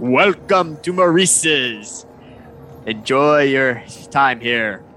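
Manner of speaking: big creature's deep, slow, low, unhurried drawl. As someone walks into the elephant's shop, greeting them in a deep Maurice elephant voice. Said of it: "you just hear this deep voice".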